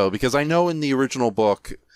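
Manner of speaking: plain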